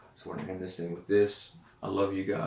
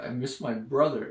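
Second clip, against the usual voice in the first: tearful, sobbing, breaking down crying; 4 semitones higher, 4 dB louder than usual. Retelling breaking down in a vision of Jesus: retelling own crying. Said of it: "I'm crying".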